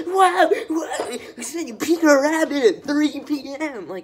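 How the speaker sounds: over-the-top gushing, shrill, booming and drawn out. Mocking the video host's delivery: imitating overly expressive gushing. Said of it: "She's so expressive".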